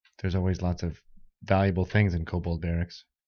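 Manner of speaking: sardonic, sarcastic, mocking tone. Voicing a character who comments on the kobold barracks: sarcastic in-character line. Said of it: "he says sarcastically".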